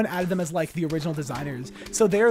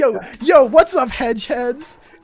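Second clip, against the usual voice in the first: put-on hyped character voice, higher and louder; 7 semitones higher, 9 dB louder than usual. Retelling a bit pretending to be NPCs excited for the game: mock excited NPC. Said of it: "pretended like we were, uh, uh, N P Cs being really excited".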